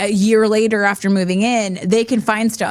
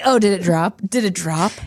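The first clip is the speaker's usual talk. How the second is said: play-acted, every word soaked in disgust and revulsion; 2 semitones lower than usual. Teasing the other speaker about how they read it aloud: mock disgust. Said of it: "reading this like in so much disgust".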